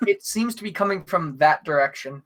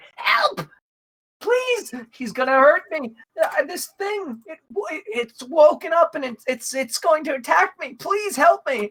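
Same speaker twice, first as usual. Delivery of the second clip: character scream, much higher; 12 semitones higher than usual. A game narrator voices a character caught by a scarecrow: Drunjay screaming for help. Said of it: "she's screaming like".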